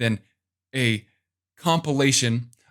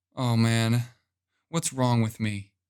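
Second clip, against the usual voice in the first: hushed, soft, downcast, depressed voice; 2 semitones lower than usual. Demonstrating for listeners how a depressed person thinks, in a soft depressed voice. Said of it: "Soft voice".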